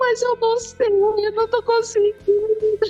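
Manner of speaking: very high, tearful mock crying and sobbing. Retelling telling a partner they can't make it work: retelling own crying words. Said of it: "já tô chorando, me debulhando em lágrimas".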